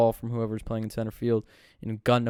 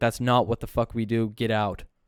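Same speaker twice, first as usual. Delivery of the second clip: put-on yell, angry in tone; 3 dB louder than usual. Retelling a player's ejection, imitating Sean yelling angrily at him. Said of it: "yelling at him".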